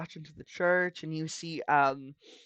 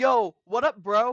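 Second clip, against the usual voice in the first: very loud, high-pitched, laid-back bro voice; 6 semitones higher, 8 dB louder than usual. In a game, a nearby cleric greets the players: casual bro-talk cleric voice. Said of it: "he just goes like".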